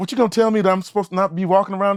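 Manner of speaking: dismissive, no-nonsense, brushing-off tone. Retelling a scene as Mama C finds them at her house: imitating Mama C. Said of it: "She's like".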